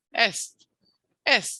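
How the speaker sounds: stress on the E of est. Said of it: "on E".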